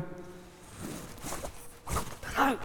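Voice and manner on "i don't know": high, soft, unsure mumble. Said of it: "And you go".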